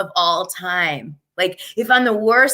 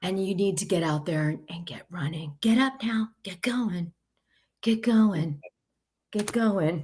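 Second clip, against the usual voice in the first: flat, soft, level, toneless monotone; 8 dB quieter than usual. Speaker acts out how Teddy talks, in a flat Teddy impression. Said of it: "that's my Teddy Imagery. She's just flat".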